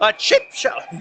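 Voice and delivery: very high squeak as the voice breaks. Hockey play-by-play commentator calling a shot on goal, voice crack. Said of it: "we had a little bit of voice crack there".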